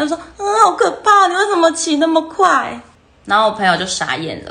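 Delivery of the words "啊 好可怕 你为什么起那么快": mock very high, loud bawling sobs through tears. Retelling a boy's words at the school gate, imitating loud wailing sobs. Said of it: "那个男生就在校门口嚎啕大哭".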